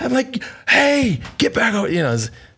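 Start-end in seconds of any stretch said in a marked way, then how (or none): 0.7-1.9 put-on, very high, light, acted-out yelling. Retelling yelling at others to come back from a bear: imitating own yelling. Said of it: "I start yelling at Courtney and Woody".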